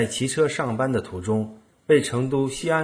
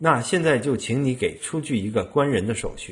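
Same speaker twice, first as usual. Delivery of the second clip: ordinary talk, nothing marked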